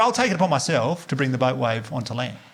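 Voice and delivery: ordinary talk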